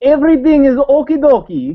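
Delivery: put-on Russian accent, very high-pitched and loud. Trying a phrase for the others in a Russian accent. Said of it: "Now I want to hear the Russian accent".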